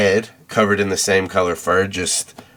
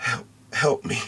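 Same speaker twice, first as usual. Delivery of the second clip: faint, soft, barely-there whispered voice; 5 semitones higher, 7 dB quieter than usual. A game master voices a voice a player hears in their head: faint soft voice. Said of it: "a faint, soft voice in your head".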